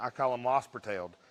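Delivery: low-pitched Eastern Kentucky accent. Describing an animal's rear legs, the speaker names a term in an Eastern Kentucky accent. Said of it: "in my Eastern Kentucky accent".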